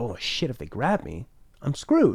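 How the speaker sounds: ordinary delivery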